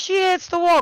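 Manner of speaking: very high race-caller's broadcaster-style cry. Retelling a crash, imitating the broadcaster screaming the call. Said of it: "Sam screaming as the broadcaster".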